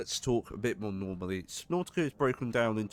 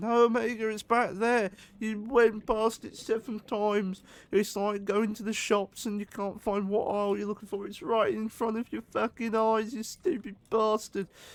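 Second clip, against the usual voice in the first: mock very high-pitched, shrill yelling; 12 semitones higher, 4 dB louder than usual. Lost while searching for a fragment, the speaker imagines a viewer yelling; imitate the yell. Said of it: "Someone out there is most probably yelling".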